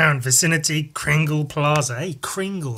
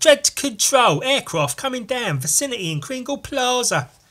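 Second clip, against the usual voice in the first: higher-pitched British police constable voice; 8 semitones higher than usual. Showing how he imagines Dredd radioing control, Dredd as an English Bobby. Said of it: "talks like a like a bloody English Bobby".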